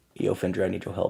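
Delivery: very low, hushed whisper. Player showing what they say near water to call for help, whispering. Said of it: "and I just whisper".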